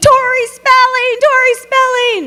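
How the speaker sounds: put-on shrill, very high-pitched hollering. Recounting calling out to a woman who won't turn around, retelling a yell.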